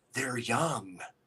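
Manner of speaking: soft, hushed, barely-there half-whisper. Retelling a woman's voice heard on a video recording: imitating a half-whisper. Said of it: "and she whispered".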